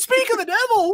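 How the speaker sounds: squeaky, high-pitched, clownish villain voice. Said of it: "he sounds like a clown".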